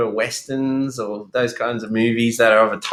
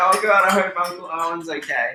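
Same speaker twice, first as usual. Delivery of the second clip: high, tearful voice, sobbing through words, acted; 6 semitones higher than usual. Teasing another speaker by imitating them crying at a movie: imitating Loz crying.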